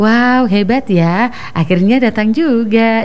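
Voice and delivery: sarcastic teasing tone. Explaining how people tease someone who is always late, retelling a sarcastic jab. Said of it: "pakai nada seperti itu ya".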